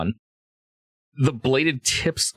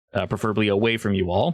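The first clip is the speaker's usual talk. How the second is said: plain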